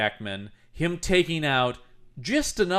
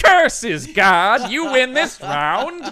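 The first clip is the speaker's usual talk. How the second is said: high, loud, screechy skeleton villain voice. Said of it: "like a skeleton voice going".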